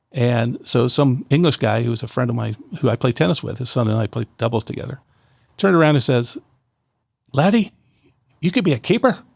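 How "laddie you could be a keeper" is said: put-on Irish brogue, pitched up. Retelling what an English tennis friend told him, in a put-on Irish accent. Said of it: "I'm using an Irish accent for a guy who's English".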